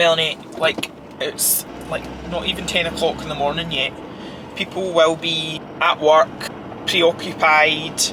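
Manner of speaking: plain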